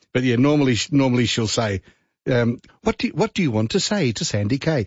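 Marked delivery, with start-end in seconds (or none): 2.8-4.8 put-on lovely English accent, slightly higher pitch. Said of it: "in a lovely English accent".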